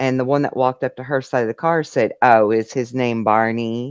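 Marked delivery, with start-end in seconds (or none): 2.2-3.9 slow, snarky, mock sarcastic drawl. Retelling what a figure at the car said to her: imitating a snarky remark. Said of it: "Real snarky like to her".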